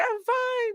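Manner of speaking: put-on very high, tearful sobbing whimper, crying little-boy voice. Imitating the crying boy from a commercial: mock crying. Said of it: "And he's crying".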